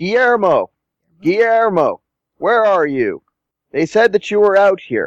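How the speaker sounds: loud, booming, very high-pitched call. Game master voicing someone calling from behind, toward the gate, loud booming voice. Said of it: "a loud, booming voice".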